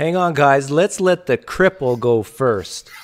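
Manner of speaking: boisterous, rowdy, very loud, high yell. Retelling going out to eat, the speaker quotes Leon holding the door: imitating Leon's boisterous voice. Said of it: "Leon with his boisterous voice".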